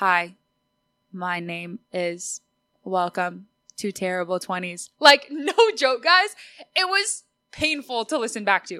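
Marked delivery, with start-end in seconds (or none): 0.0-4.9 mock robot-like awkward voice, much slower. Retelling her first awkward recording, imitating her robotic past self. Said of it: "I sound like a freaking robot".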